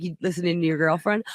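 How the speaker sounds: ordinary delivery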